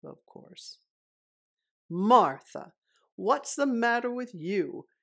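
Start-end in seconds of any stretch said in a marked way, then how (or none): 1.9-4.8 full-throated, booming, very loud shout. Mr. Wagon Wheel, hit by raw egg, shouts at Martha, yelling. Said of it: "yelled Mr. Wagon Wheel".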